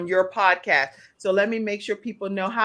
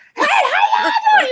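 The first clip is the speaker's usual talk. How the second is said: very high, shrill, very loud hollering; 9 dB louder than usual. Host contrasting her own loud greeting with her guest's voice, screaming and hollering. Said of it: "I'm over here screaming and hollering".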